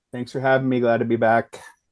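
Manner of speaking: dull, flat, no excitement at all. Thanking the host for having them back, not excited. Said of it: "You don't sound very excited about that".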